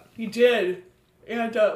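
speaking through a yawn. Recapping a story on the podcast, yawning while talking. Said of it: "sorry, yawning".

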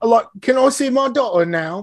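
very high, overdone, badly done fake British accent. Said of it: "You were trying way too hard".

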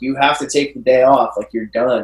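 put-on angry voice. Retelling the manager telling them to take the day off: imitating an angry manager. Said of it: "was angry with me".

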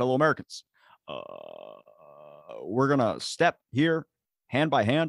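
grand, swooping oratory with big rising and falling pitch. Mock address to fellow Americans, as a president: Obama impression. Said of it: "I probably could do a better Obama".

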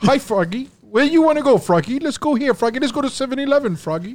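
high-pitched cartoon frog puppet voice. Answering a friend's request to do Kermit the Frog: Kermit the Frog voice. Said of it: "What do you think Kermit the Frog sounds like?".

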